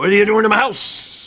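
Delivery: put-on monster voice. Trying the voice again for the other player: Lynel voice. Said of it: "What is my Lynel voice?".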